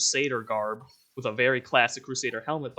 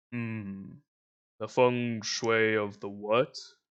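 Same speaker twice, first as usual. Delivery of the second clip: deep, low, rumbling bass voice; 3 semitones lower than usual. Voicing a character who asks about the village: deep booming voice. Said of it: "In a deep booming voice, like so low it rumbles".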